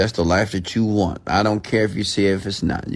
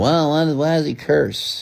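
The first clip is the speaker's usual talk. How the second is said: complaining tone with raised pitch; 6 semitones higher than usual. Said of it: "Some of you are like".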